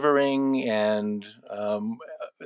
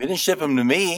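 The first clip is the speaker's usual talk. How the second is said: playful mock complaining, teasing and pitched up; 6 semitones higher, 4 dB louder than usual. Interviewer teases a guest who shipped cookies but not to them, teasing. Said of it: "I'm teasing you".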